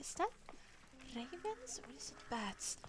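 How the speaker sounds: soft whisper, muttered under the breath. A storyteller voices a character staring at a tattoo, whispering under her breath. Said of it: "she whispers underneath her breath".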